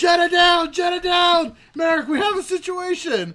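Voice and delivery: very high, very loud, urgent alarm scream. Speaker retells a man shouting after the speaker skids at his feet: retelling a scream. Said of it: "as he screams".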